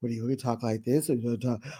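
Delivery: needling, soft-spoken taunting voice, very low. Recapping an argument, retelling Dorit mocking Sutton's soft voice. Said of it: "Dorit starts mocking Sutton's soft voice".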